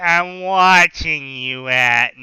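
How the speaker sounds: low, loud put-on cartoon monster lady voice. Doing a line from the film: Monsters Inc lady voice. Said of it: "he's doing this voice. He's trying to sound like the lady from Monsters Inc".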